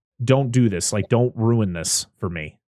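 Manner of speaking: acted, scary, deadly serious man's voice. Retelling a character pinning a woman against a van, retelling a super serious warning. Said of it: "where he's like super serious".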